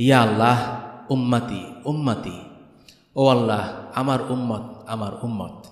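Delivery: ordinary delivery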